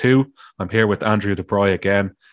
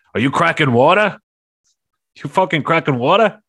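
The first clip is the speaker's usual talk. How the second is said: ranting, high, put-on New York accent; 6 semitones higher, 3 dB louder than usual. Retelling what they said to the other speaker over drinks, in a New York accent. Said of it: "I went into a New York accent".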